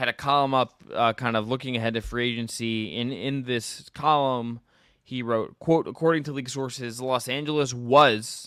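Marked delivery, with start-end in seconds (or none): 7.0-8.5 heavy stress on the word "was". Reading a quote from a reporter's column: emphasis on was. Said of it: "I'm going to put emphasis on was. That's my own emphasis".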